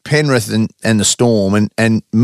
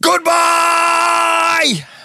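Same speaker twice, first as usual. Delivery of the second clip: very high, long, drawn-out shout. Giving a code word tip while imitating Dan Ganane, a rugby league caller. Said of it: "I'm gonna do it in someone who we work with a lot's voice".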